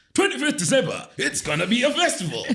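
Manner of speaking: very high, swooping, pushy sales pitch. Explaining what a hard sell is, demonstrating one: hard-sell sales delivery. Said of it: "I'm using my voice in that way because I'm selling it to you hard".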